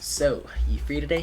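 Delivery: oily, slimy, sleazy voice. Voicing a character while reading aloud: slimy voice. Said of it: "I'm gonna give him a slimy voice".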